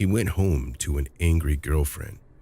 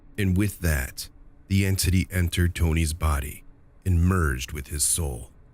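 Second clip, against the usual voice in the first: usual speaking voice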